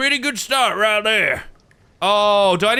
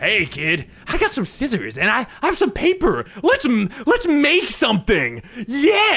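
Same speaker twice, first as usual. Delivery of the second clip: put-on animated, swooping kids' presenter voice. Imitating Mister Maker getting out of a colorful van: Mister Maker impression. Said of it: "gets out and he's like".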